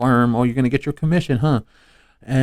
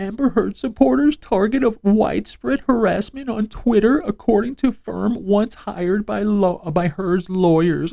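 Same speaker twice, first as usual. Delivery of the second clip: high, put-on sorrowful, fake-sad reading voice; 8 semitones higher than usual. Reading a news headline aloud to mock it, in a mock-sad voice. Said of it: "You have to read it in a sad voice".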